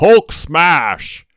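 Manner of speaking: loud, high, roaring monster-style yell.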